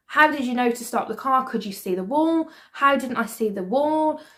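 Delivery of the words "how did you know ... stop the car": plain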